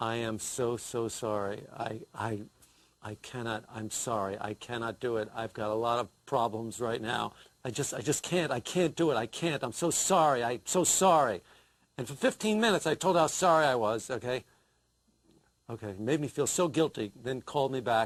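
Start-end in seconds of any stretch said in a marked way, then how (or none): 0.0-11.4 put-on solemn funereal voice, low. Retelling calling someone up to back out of something: put-on funereal voice. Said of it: "I put on my funereal voice".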